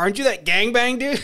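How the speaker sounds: play-acted, high-pitched hollering, as if from a distance. Retelling a stranger calling across a bar porch: imitating someone yelling. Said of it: "he's just yelling across the bar".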